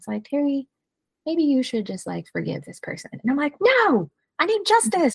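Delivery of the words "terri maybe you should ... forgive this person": tiny little voice. Acting out her inner conflict at a crossroads: tiny little Holy Spirit voice. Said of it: "tiny little voice comes in".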